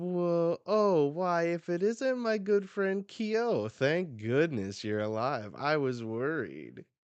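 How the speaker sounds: cheeky, high and sly. Reading a comic panel aloud, a character greeting a friend: cheeky. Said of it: "acting all cheeky".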